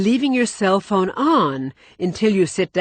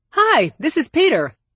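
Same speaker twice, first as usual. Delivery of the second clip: mock cheerful, cheery, high-pitched voice; 9 semitones higher than usual. Demonstrating an unknown caller introducing himself on the phone: cheery voice. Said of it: "A cheery voice says".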